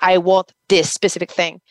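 ordinary talk

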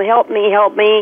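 ordinary talk

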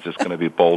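ordinary delivery

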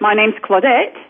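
"Claudette" rising like a question, uptalk. Demonstrating statements said like questions, rise on "Claudette". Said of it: "it goes up at the end".

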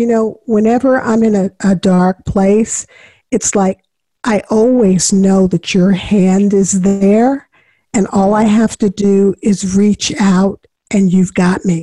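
ordinary talk

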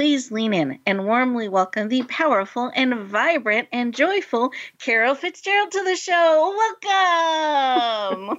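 high, smiling voice, long drawn-out "welcome". Host welcoming a guest author to the show, smiling voice. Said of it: "I can just hear the smile in your voice".

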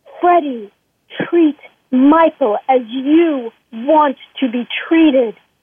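slow, drawn-out, theatrical weight on each word. Retelling what Ruth said to them, imitating Ruth, slow and dramatic. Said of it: "she said it so dramatically and so slowly".

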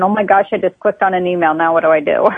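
plain

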